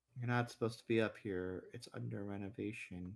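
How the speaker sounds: flat, low, very quiet monotone deadpan. Imitating the manager speaking to the cops: imitating a deadpan manager. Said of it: "with that same kind of deadpan voice".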